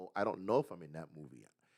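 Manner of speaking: mock detached, aloof, uninterested offhand tone. Retelling how Charlie Cox answered a fan's question: imitating Charlie Cox, aloof. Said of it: "Charlie Cox said it very aloof".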